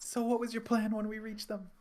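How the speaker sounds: loud shouting. Acting out a character shouting a question to the train conductor: shouting to the conductor. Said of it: "she's gonna shout to the conductor".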